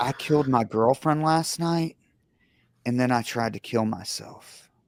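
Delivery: ordinary delivery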